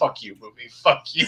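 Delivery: cursing, muttered privately under the breath. Retelling own reaction in a theater at a film's ending: imitating muttering under breath. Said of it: "I'm just muttering under my breath".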